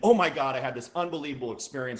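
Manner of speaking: lively, bursting with excitement. Showing how tone inflections create excitement when telling a story, excited. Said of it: "I create excitement".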